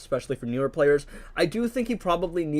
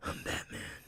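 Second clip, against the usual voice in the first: very quiet, hushed, barely-there voice. Comparing Batman voices, now Robert Pattinson's: Robert Pattinson Batman voice. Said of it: "Robert Pattinson, I think, is".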